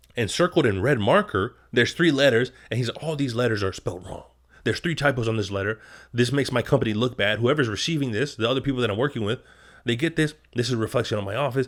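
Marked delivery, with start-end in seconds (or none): none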